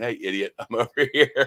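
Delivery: words broken up by laughter. Retelling how the listener called from across the street, imitating someone laughing while talking. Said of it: "on the phone laughing".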